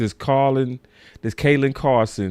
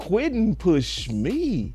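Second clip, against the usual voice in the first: genuinely shocked, stunned, taken-aback exclamation; 7 semitones higher, 5 dB quieter than usual. Retelling what Dak said about Quentin: imitating Dak sounding shocked. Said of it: "he said it like he was shocked".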